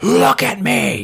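very loud, frightening scream. Recapping a show scene where a rejected character pleads, retelling a scary scream. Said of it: "and he screams".

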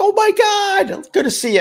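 mock freaked-out, excited, very high-pitched voice. Retelling how a woman spotted the speaker's brother past the bouncer: acting out a freaked-out greeting. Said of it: "She freaked out".

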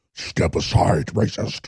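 sinister official voice, low, quiet and menacing.

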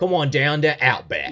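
put-on high, loud TV-commercial Australian accent delivery. Reminiscing about old Outback commercials, a speaker does the Outback commercial guy voice. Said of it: "The American guy with the Australian accent".

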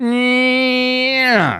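play-acted sheepish voice, very high and stretched. Retelling an answer to a teacher's instructions: imitating own sheepish reply. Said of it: "I just very sheepishly went".

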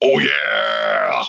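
very low, creaky, rough cartoon mascot growl. At an audition, the speaker does the line asked of every male, Kool-Aid Man impersonation. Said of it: "our best Kool-Aid impersonation guy".

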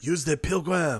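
put-on French accent. A speaker retries a movie quote to get the accent right, Lambert French accent. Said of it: "you gotta do the right accent".

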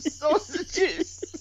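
very high, teary, about-to-cry voice. Quoting a film character's one-liner as he says it: imitating a line said close to tears. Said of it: "it looks like he wants to cry".

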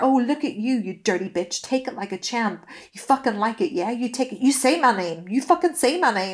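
cringey, choreographed, staged dirty-talk delivery. Retelling an ex's bedroom talk: imitating cringe porn-scene dirty talk. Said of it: "exactly how those really cringe choreographed porn scenes are".

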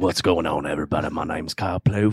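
loud put-on Australian accent. Introducing himself at the start of the show, australian accent. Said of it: "That was actually Australian right there".

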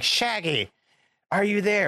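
very high calling-out voice, pitched way up. Retelling Vincent Price calling Shaggy through a crystal ball: Vincent Price impression. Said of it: "he's just kind of, like, contacting Shaggy through this crystal ball".

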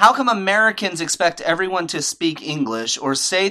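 ordinary delivery

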